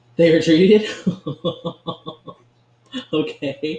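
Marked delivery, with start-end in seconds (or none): 0.2-0.9 high, loud excited disbelief. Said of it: "I know I sound a little bit excited".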